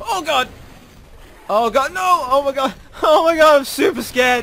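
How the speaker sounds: very scared, high, loud panicked screaming.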